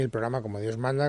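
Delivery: plain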